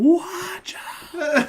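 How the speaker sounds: play-acted, very high, alarmed and panicked cry. Telling the story of a runaway object heading for two ladies, retelling a scream. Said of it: "I'm just screaming".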